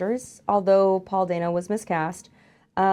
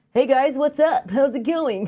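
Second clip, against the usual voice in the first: plain American voice, pitched up; 6 semitones higher, 3 dB louder than usual. Mocking an actor who plays Napoleon without an accent: Joaquin Phoenix impression with no accent. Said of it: "everybody else have a accent in it and Joaquin Phoenix is just".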